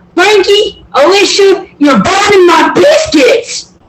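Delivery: sweet, very high-pitched calling voice. Retelling what her friend always said to her young kids, imitating Missy. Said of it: "she'd always be like".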